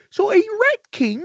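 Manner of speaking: put-on puppet frog voice. Showing how to do a Kermit the Frog voice. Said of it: "try to do Kermit the Frog".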